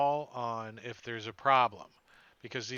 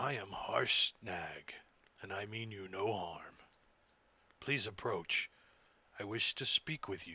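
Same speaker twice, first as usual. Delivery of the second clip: low, calm and soft giant voice; 4 semitones lower, 6 dB quieter than usual. A game narrator voices a giant as the party gets close: low, calm Harshnag voice. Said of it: "he says in a low, calm voice".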